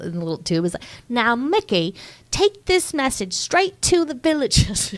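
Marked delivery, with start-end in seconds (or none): 1.1-4.9 very high, put-on British villager accent. Quoting a villager from a movie scene, british accent. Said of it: "It's British accents are never not funny".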